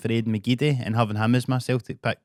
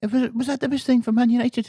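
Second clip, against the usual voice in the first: higher put-on Irish footballer voice; 13 semitones higher than usual. Imitating Roy Keane questioning a decision: Roy Keane impression. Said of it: "Good impression".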